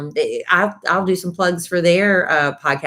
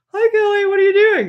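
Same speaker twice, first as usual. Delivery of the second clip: put-on very high-pitched high school girl voice; 3 dB louder than usual. Doing an impression of a girl from high school: imitating a high school girl. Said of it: "here's an impression of a girl I went to high school with".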